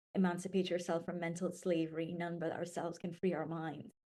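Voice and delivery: ordinary talk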